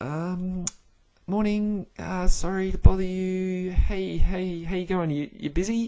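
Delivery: very high, slow, timid, nervous voice. Acting out a junior person phoning the big scary boss: imitating a worried junior. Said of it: "very worried about ringing the big scary boss".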